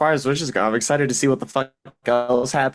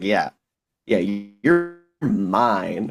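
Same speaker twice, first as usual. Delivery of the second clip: creepy, eerie voice, pitched lower; 4 semitones lower than usual. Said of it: "fucked up and creepy motorcycle flashback".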